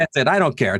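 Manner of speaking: ordinary talk, nothing marked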